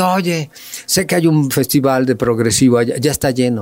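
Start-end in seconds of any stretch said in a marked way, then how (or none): none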